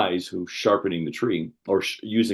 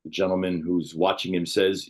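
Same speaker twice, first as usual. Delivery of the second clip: plain reading voice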